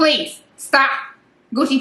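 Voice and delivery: very high, shrill, scolding yell. Speaker yells at Gucci while talking to the viewers: yelling. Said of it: "I'm sorry yelling at him".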